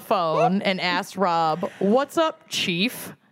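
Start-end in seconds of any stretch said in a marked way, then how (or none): 1.8-3.1 imitated aggressive tone, higher. Retelling a man's greeting on a phone call: imitating an aggressive tone. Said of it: "Emmett's tone of, vo-, of voice as being aggressive".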